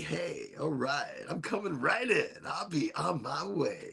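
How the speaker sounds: slow, soft, easy, laid-back, hushed drawl. Comparing cannabinoids entering the body to a movie star, Matthew McConaughey impression. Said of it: "The cannabinoids are McConaughey".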